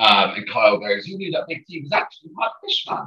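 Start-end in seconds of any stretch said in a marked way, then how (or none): 1.1-3.0 high, soft attempted Geordie accent. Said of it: "was my attempt at a Geordie accent".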